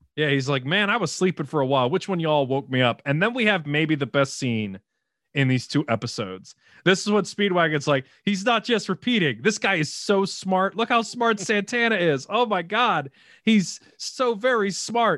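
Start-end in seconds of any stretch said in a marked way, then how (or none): none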